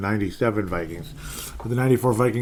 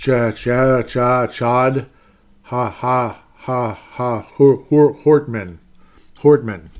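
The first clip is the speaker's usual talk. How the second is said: stammering put-on sportscaster voice, louder; 2 semitones higher, 7 dB louder than usual. After mispronouncing a name, the speaker slips into a Sid Hartman impression. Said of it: "I'm sounding like Sid Hartman".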